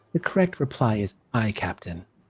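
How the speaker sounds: low, very hushed, discreet delivery. A commander leans over to a lieutenant commander so as not to shame him, in a hushed tone. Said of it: "in a very hushed tone".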